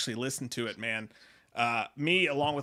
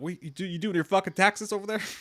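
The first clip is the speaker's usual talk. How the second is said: put-on furious outburst, pitched higher; 5 semitones higher than usual. Retelling a famous angry outburst: imitating Tom Cruise freaking out. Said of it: "it sounded like Tom Cruise freaking out, but he was pissed".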